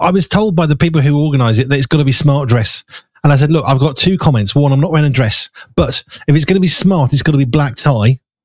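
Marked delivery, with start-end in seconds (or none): none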